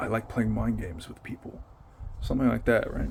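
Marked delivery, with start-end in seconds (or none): 0.0-1.6 muttered whisper under the breath, quieter and slower. Retelling what he whispered to himself, as the speaker's sister reported: whispered under his breath. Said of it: "he like whispered under his breath and said".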